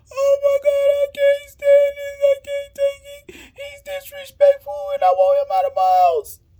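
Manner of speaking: put-on very high, loud, tearful sobbing wail. Retelling your mother's reaction as the police officer arrives, imitating her crying hard. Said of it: "Now my mama crying extra hard".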